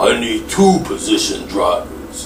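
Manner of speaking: deep, gruff action-movie voice.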